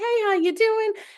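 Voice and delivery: acted, squeaky, very high, cheery, happy voice. Retelling how a server greeted the speaker: imitating a very happy server. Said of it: "she was just so happy".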